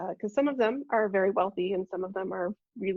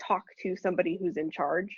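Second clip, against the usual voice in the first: ordinary delivery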